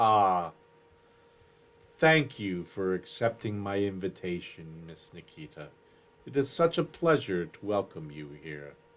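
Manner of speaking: very low voice, smooth as oil, soft. Narrator voicing a seated figure welcoming Miss Nikita, smooth, very deep voice. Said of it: "a voice that's smooth as salad oil and very deep".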